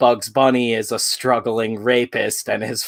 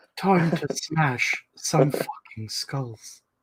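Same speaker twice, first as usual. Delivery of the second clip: put-on cartoon bear voice, higher and quieter; 4 semitones higher, 7 dB quieter than usual. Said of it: "That's my best Winnie the Pooh".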